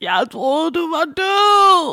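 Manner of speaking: long, very high, loud, slow howling wail. Retelling phoning Sim while standing in the street; retelling own wailing. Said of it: "og jeg hyler".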